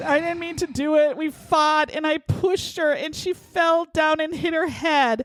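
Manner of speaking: high, fake weepy crying voice. Retelling what a man said when pressed about her death: imitating fake crying. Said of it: "pretending to cry again".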